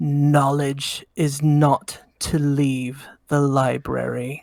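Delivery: deep, grinding voice. Game master voicing a voice the player hears in their mind: deep, grinding voice. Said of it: "In a deep, grinding voice in your mind".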